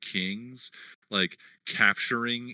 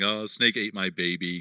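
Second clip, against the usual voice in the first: ordinary talk, nothing marked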